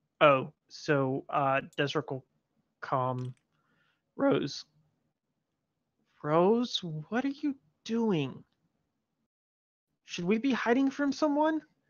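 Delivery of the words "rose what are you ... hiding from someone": half-hushed, hurried, pitched-up delivery. A player's character asks a companion whether they should be hiding, in a semi-hushed voice. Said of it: "Desert speaking in a semi-hushed voice".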